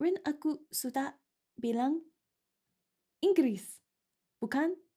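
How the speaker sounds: halting reading, one word at a time. Streamer trying to read indonesian text aloud, one word at a time. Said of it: "reading them all like one word at a time".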